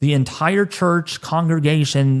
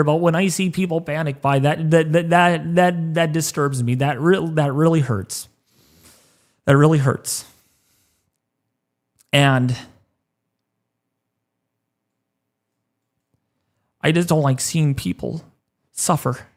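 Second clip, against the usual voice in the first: fighting to stay composed, holding back tears. Speaking to viewers on a stream, holding back tears. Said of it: "I'm trying to hold my composure here".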